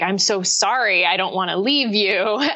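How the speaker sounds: put-on sobbing. Retelling telling the team about quitting, imitating own past sobbing. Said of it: "I was sobbing, like".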